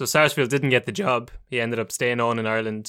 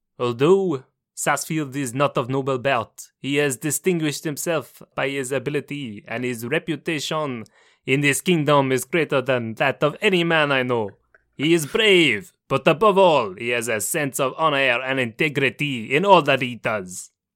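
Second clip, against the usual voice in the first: put-on flawless Montreal French-Canadian accent in English; 2 semitones higher than usual. Quoting what a man said about Sarsfield, in a Georges St-Pierre French-Canadian accent. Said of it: "It's a flawless French-Canadian accent".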